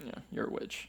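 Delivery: soft, smug, whispered taunting tone. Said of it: "Agatha's like".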